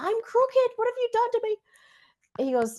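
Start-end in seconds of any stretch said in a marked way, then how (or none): 0.0-1.6 very high, fast, panicked rush. Retelling a scary moment with him, acting out own panic. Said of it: "And I'm panicking".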